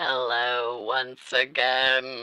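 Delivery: put-on spooky voice. Greeting the audience again in a put-on spooky voice. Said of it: "It's the spooky voice".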